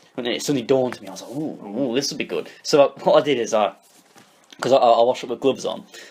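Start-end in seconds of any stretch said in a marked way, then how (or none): none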